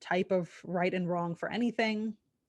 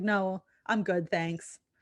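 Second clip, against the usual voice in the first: grating mock Southern accent, slower; 4 dB quieter than usual. Retelling brushing him off on a walk, in an annoying southern accent. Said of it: "annoying Southern accent".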